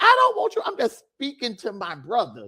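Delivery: plain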